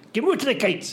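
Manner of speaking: forceful, energetic gusto, Gemütlichkeit said forcefully. Speaker says the German word Gemütlichkeit forcefully, and the other praises the gusto; say it with forceful gusto. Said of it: "I love how you did it with gusto".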